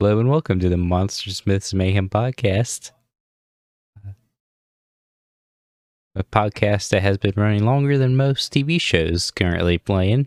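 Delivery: uneasy, nervous delivery. Opening the podcast, nervous. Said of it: "you sound so nervous".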